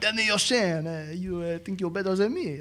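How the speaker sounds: high, put-on French accent. Speaker impersonating the Night Fox, addressing Danny O'Shan, Pepe Le Pew voice. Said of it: "I'm doing a Pepe Le, Le Pew Le Thief".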